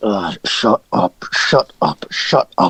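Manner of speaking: very slow, annoyed hobgoblin moan. Voicing irritated hobgoblins snapping at noisy goblins: annoyed hobgoblins. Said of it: "the hobgoblins are just like".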